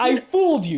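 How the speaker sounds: put-on thick German accent. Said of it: "He has, like, a thick German accent".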